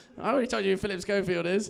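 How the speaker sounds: usual speaking voice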